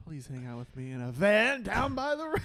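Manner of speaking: very loud, high-pitched comic bellow, belted out. Continuing the bit as Chris Farley, pleading: Chris Farley impression. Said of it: "That's Chris Farley".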